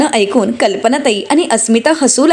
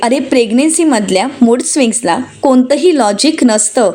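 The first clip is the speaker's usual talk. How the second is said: plain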